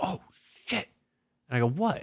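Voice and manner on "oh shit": soft, hushed, whispered swear. Speaker retelling what Shitty said on opening the attic crawl space, quietly quoting Shitty. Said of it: "he just goes quietly".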